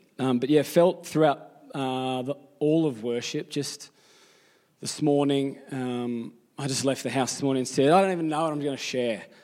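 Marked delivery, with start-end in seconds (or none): 7.9-9.2 blunt, rude, defeated, hopeless delivery. Retelling own words on leaving the house: mock rude, hopeless tone. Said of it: "I didn't say it like that, that rudely".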